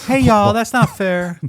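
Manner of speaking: very high, squeaky, put-on woman's voice. Imitating a mother protesting that it's not fair: imitating mama's high voice. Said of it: "That was my mama doing that".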